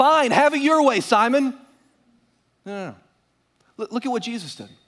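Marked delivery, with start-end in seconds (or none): 0.0-1.5 acted-out adult petulant tantrum, pitched up. Retelling a Bible story, acting out a man's reply to Simon: mock adult temper tantrum. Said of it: "He threw an adult temper tantrum and said".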